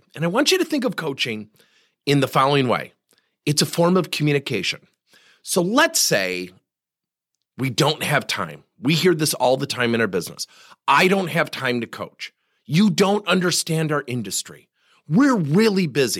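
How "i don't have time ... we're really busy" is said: ordinary talk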